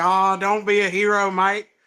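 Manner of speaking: fake Australian man's accent. Asked to do an accent, quoting a man from an interview, in a put-on australian accent. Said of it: "I can do like Australian".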